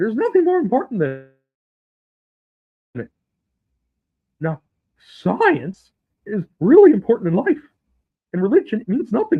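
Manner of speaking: very high, animated, swooping sing-song put-on voice. Doing an impression of the scientist: Neil deGrasse Tyson impression. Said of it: "That is my impression of Neil deGrasse Tyson".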